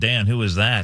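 normal talking voice

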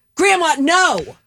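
furious, very high-pitched, angry voice. Starting a round-robin game of saying one line in different moods: angry. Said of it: "first we're going to say it angry".

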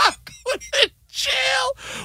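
high, slow, mock despairing wail.

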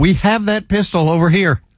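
ordinary delivery

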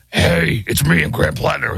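rough, gravel-edged, creaky rasping voice. Reading the day's top stories, imitating Graham Plattner: gravelly Graham Plattner voice. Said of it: "the gravelly voice".

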